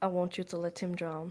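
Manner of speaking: private, confidential voice. Player's character grabs a companion's arm and speaks to him really quietly. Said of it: "I'm just gonna say really quietly".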